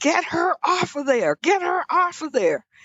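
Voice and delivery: high, mild mock scream. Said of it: "started screaming at my mother".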